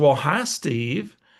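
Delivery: put-on woman's voice. Steve retelling a phone call, imitating Barbara's voice. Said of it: "I got to use Barbara's voice".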